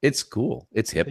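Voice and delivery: slow, unhurried, drawn-out delivery. Mimicking the other speaker's claim that VR is the future: imitating the other speaker. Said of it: "You're like".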